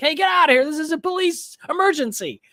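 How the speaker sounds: mock, shrill, very high-pitched shout. Retelling a movie chase scene, yelling at a jogger over the shoulder: imitating Dennehy yelling. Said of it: "Dennehy's just yelling at him over his shoulder".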